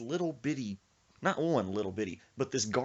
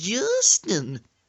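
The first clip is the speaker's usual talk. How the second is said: put-on very loud, high, scared country accent; 9 semitones higher, 12 dB louder than usual. Retelling what a scared bike passenger said: imitating Sir Isaac's country accent. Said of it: "He's talking in that country accent".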